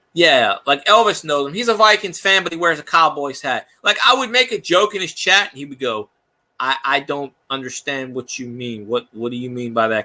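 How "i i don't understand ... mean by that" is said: put-on flat monotone, much lower and quieter. Retelling how a viewer answered jokes in chat: imitating a monotone viewer. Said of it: "he talked monotone".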